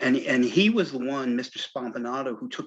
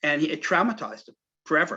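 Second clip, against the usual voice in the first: normal talking voice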